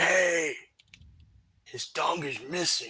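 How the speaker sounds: high, drawn-out, acted loud whisper. Mocking how a player whispers, not a great whisperer: imitating Samu's loud whisper. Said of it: "his whispering is like".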